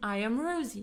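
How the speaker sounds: ordinary delivery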